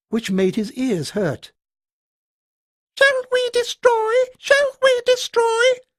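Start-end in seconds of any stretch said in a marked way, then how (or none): 3.0-5.6 put-on very high, shrill, piercing childlike voices. Narrating a story, voicing the creatures' question in a high, piercing, childlike voice. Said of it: "spoke in high, piercing, almost childlike voices".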